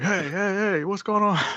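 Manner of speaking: re-enacted yell. Recounting running out at a possible fight, retelling a yell. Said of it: "I started yelling, like".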